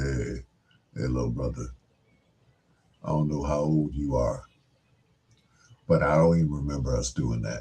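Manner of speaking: very deep, soft bass voice dropped way down. Retelling how a man walked up while you were playing songs, in a deep Blue Lovett voice. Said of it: "with that that deep voice of his".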